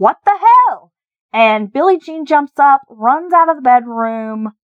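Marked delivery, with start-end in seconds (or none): 0.0-0.9 mock yelled-out cry, very high and shrill. Retelling a crime where a resident yells out: imitating someone yelling. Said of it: "Billy Payne yells out".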